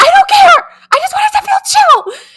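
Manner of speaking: all-out yell, very high and very loud. Retelling yelling at wedding vendors: imitating herself yelling. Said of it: "yelling at these vendors".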